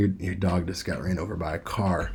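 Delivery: sombre, sunken, low, very hushed, subdued voice. Speech coaching example showing contrast, with everything dropped down low. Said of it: "Everything drops down".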